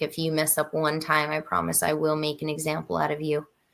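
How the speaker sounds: plain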